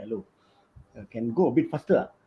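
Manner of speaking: whispering. Retelling a bike ride, asking his wife to go faster: retelling a whisper. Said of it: "I whisper to my wife".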